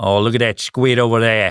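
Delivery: put-on Australian accent, missing the mark. Asked how to say a slang term, trying it in an Australian accent. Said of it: "an Australian accent?".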